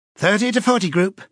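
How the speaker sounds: piercing, high-pitched, yapping female call. A woman's voice on the telescreen calls a group to places; piercing female voice. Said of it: "yapped a piercing female voice".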